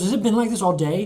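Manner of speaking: very high, very loud, angry, shrill, furious voice. Retelling how Allie reacted on seeing her makeup: imitating Allie being pissed. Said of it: "she was pissed".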